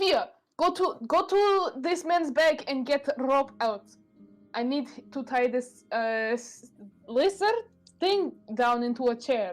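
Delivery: character voice, yelling. Yelling at Fia in character to fetch rope: in-character yelling. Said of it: "yell at Fia".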